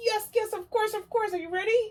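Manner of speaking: piped very high in a puppet-style voice. The teacher asks the owl puppet to try again; Mister Owl puppet voice. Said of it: "Can you try it now, Mister Owl?".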